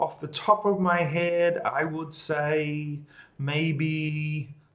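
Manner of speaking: hesitant, unsure, very slow, drawn-out delivery. Teaching how to use an idiom when not confident: unsure, hesitant delivery. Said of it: "I don't say it with confidence because I'm not sure about it".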